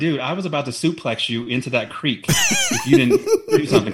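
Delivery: high, wide, laughing, menacing delivery.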